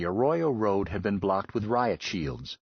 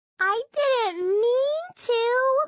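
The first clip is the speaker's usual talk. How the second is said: put-on very high, loud baby girl voice; 5 dB louder than usual. Reading a story, Lummox protests to his scolding friend, Lummox's baby girl voice. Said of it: "he protested in his baby girl voice".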